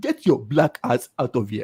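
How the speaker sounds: exaggerated put-on Nigerian accent. Teasing the person he is talking with, the speaker does an exaggerated Manny impression. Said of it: "Like you said".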